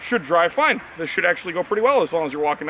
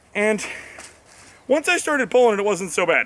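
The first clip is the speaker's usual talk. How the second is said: very out of breath, winded, breathless talking; 4 semitones higher than usual. Talking to the camera after pulling it by rope, very out of breath. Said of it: "I sound very out of breath".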